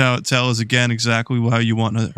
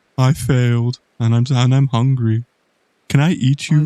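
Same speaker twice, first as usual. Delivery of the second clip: put-on sad little creature voice; 4 dB louder than usual. Voicing the sad-looking Pokemon on screen: voicing a depressed Munchlax. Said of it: "Of course he's gonna be depressed".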